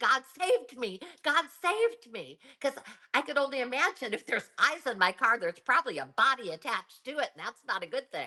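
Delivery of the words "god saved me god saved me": high, stretched-out, repeated crying. Explaining to a co-speaker what they screamed back then, reenacting own past screaming. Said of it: "I was screaming".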